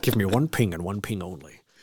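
low, hushed, put-on Scottish accent. Quoting a line from The Hunt for Red October, Scottish accent impression.

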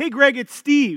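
chummy overfamiliar voice. Retelling a telemarketer's voicemail, imitating him sounding like he knows you. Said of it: "he says it just like he knows you".

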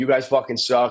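plain

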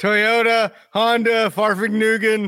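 put-on yelling rant, held down. Mocking a wrestler's promo yelled in Japanese: imitating Tojo Yamamoto's yelling promo. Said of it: "this guy's promo is basically".

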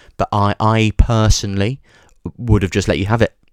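ordinary talk

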